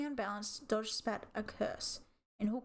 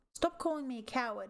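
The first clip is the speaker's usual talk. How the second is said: angry, furious snarl; 2 semitones higher than usual. Reading a story, a cat answering a rival's taunt with a snarl. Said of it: "he snarled".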